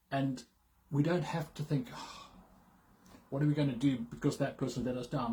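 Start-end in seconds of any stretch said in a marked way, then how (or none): none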